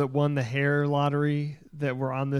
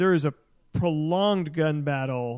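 usual speaking voice

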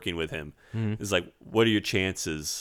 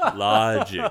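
put-on serious TV voice, louder; 2 semitones higher, 4 dB louder than usual. Imitating Richard Franz pleading on TV during the breakdown: imitating Richard Franz. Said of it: "Richard Franz is the guy that's just going".

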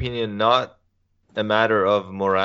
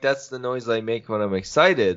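ordinary delivery

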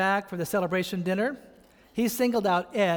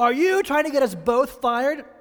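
loud, raised, barking drill sergeant yell; 6 semitones higher, 6 dB louder than usual. Speaker retells confronting Ed in his office, Stripes drill sergeant routine. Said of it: "trying to do the drill sergeant routine".

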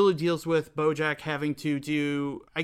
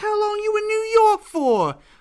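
put-on Brooklyn accent, pitched way up and loud; 8 dB louder than usual. Describing a scene from the show Glow, quoting Alison Brie's character: attempted Brooklyn accent as Alison Brie. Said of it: "I can't do the accent, but it's Alison Brie playing someone, like, from Brooklyn".

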